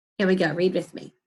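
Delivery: ordinary delivery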